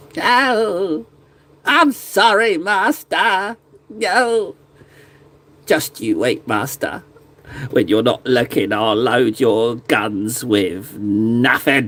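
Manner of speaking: whiny, snivelling goblin voice, low and swooping. Playing a little gretchin apologizing to its master: snivelling gretchin servant voice. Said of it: "I guess I'm a little snivelling, little snivelling little Gretchen".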